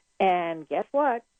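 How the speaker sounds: normal talking voice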